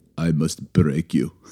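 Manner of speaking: low-pitched, best-attempt Russian accent. Showing off your best Russian accent to the others by channeling Rocky IV, Rocky IV Russian accent. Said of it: "here's my best Russian accent".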